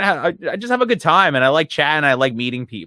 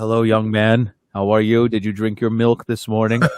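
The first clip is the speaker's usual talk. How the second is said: put-on fatherly rock star voice, lower; 6 semitones lower than usual. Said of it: "he's like".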